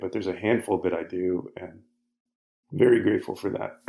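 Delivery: choked-up voice catching and breaking with emotion. Speaker expressing gratitude to people who helped him, choked up. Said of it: "I'm not getting choked up".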